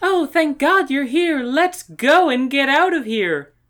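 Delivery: shrill, very high, very loud cry. Slick plays mind games on the Coronas, imitating Corona's voice. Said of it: "imitate Corona's voice".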